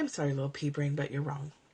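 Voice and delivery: put-on gentle, loving, kind tone. Retelling what they say to their own pea brain: imitating own loving kindness. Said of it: "I say it with the most loving kindness".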